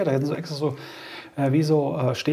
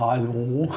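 hallo stretched out very slowly, drawn out; 4 semitones lower than usual. Imagining Pennywise greeting people at Bern station: slow Pennywise-style hallo. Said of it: "Der würde aber das dann sehr langsam sagen".

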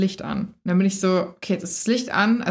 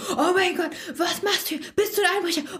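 mock frightened shriek, very high, startled; 10 semitones higher than usual. Speaker retelling how they screamed at someone coming in at 4 a.m., retelling a startled scream. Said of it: "habe ihn angeschrien".

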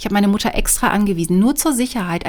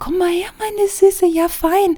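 tiny, piping, squeaky little voice, very high-pitched; 11 semitones higher than usual. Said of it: "mit hoher Piepsstimme".

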